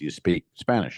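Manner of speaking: put-on halting, broken English. Telling a story about a man in Miami; imitating broken English. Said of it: "in the most only English he knows".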